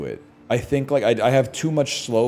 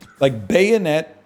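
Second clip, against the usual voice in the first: high, loud voice breaking mid-word; 7 semitones higher, 5 dB louder than usual. Talking with others, the speaker's voice cracks on a word. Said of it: "Sorry, my voice cracked".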